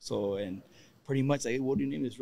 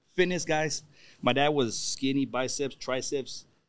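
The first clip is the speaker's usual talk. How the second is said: normal talking voice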